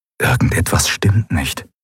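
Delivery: ordinary delivery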